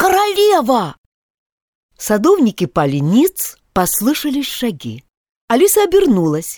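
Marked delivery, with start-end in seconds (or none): 0.0-1.0 very high, loud shouted call. Five, who has been peering into the garden, calls out, shouted. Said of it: "крикнул".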